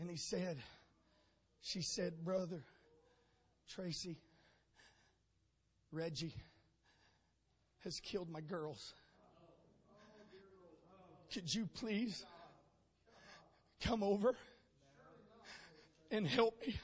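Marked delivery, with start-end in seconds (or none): 2.2-16.7 muted, subdued, held-down voice. Retelling a two thirty morning phone call: imitating Tina's subdued voice. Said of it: "A subdued voice again on the other side".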